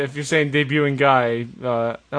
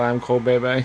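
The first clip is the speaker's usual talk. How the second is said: usual speaking voice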